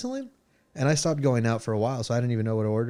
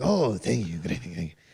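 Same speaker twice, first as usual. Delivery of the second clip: Spanish-accented impression, pitched lower; 5 semitones lower than usual. Complimented by a fan, the host answers in an Antonio Banderas impression. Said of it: "we do have Antonio Banderas in studio today".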